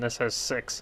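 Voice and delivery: soft, breathy voice breaking. Comparing two options by their fire engines: voice cracking. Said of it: "My voice cracked".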